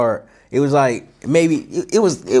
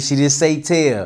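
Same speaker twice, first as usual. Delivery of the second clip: ordinary talk, nothing marked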